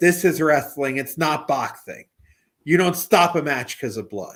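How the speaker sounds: lisping every s, loud wrestling-promo announcer style. Recalling a wrestler's post-match interview going after Joe Frazier, lisping Dusty Rhodes impression. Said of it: "Why did you talk like that?".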